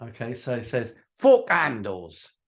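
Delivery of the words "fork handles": put-on Cockney accent, louder. Telling a joke about a customer in a uk shop, cockney accent. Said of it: "He's got a Cockney accent".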